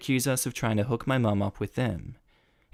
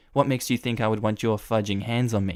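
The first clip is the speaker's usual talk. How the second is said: ordinary talk, nothing marked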